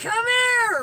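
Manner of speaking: desperate yelling, high, slow and loud.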